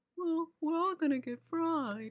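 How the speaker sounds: slightly stupid-sounding put-on voice. Asked on the spot to do one, a Freddie Prinze Jr. impression. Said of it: "In my mind, he sounds like".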